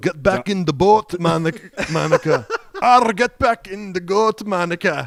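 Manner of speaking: loud, high, bellowing attempted ogre voice. Improvising a line for a character, unsure how to do it: Shrek voice. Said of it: "I'll do the voice of Shrek".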